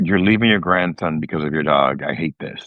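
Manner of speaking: normal talking voice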